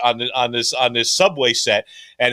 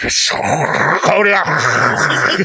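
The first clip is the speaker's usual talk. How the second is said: subway train conductor announcement voice; 3 semitones higher, 4 dB louder than usual. Asked to do the voice, the speaker demonstrates a subway conductor announcement voice. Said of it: "But it would be like this".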